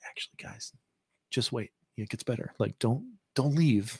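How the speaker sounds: soft, hushed, confidential aside. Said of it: "pulls this aside".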